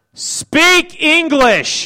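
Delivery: hard-stressed emphatic delivery. Delivering a two-word line after asking about the emphasis, with heavy emphasis. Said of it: "that much emphasis?".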